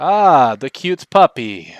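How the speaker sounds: very slow, drawn-out, sing-song, swooping character voice. Voicing Strahd greeting a puppy from behind: Strahd voice. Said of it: "there's Strahd".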